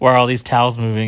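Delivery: ordinary delivery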